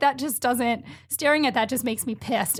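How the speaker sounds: normal talking voice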